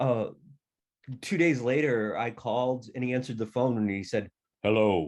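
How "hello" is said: voice suddenly deep, newly broken, like a grown man. Retelling a phone call when a boy's voice dropped: imitating a boy's voice gone deep. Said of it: "you sound like a man".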